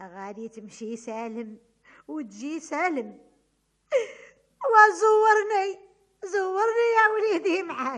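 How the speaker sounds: weeping, tearful, crying voice. A mother sends off her son on his journey, crying while saying goodbye. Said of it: "الوالدة هذه النبي ما تبكيشي".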